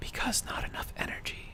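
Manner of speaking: barely voiced, soft breathy whisper throughout. Reading out a message aloud: whispered. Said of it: "I don't know why I decided to whisper that".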